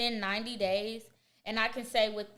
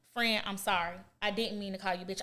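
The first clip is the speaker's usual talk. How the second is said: mock contrite, apologetic tone. Acting out apologizing to a friend for a slip: apologetic tone. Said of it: "I'm gonna be apologetic".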